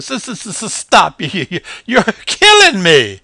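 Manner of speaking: laughing hard, very high and very loud. Narrator voices a small possum rolling on its back; laughing loudly. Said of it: ""Aw, it's only a possum, ... asked [name] as he adjusted the straps on his faded blue overalls. / asked [name] as he adjusted the straps on his faded blue overalls. / asked [name]".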